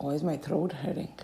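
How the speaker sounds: ordinary talk, nothing marked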